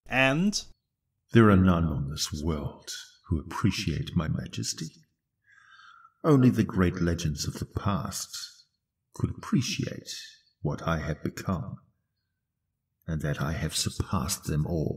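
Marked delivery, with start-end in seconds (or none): 1.3-15.0 very deep, low fantasy arch-villain voice. Describing the arch-villain trope in games, the speaker voices a classic line in an arch-villain voice. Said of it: "Ah, the arch-villain, the BBEG, a reliable trope in many of our games to serve as the figurehead of whatever troubles are plaguing the land, with classic lines such as".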